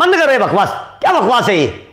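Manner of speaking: harsh, stern scolding tone. After speaking gently to no effect, the speaker switches to harsh words: harsh, stern scolding. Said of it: "थोड़ा सा कड़क शब्दों में बात करते हैं".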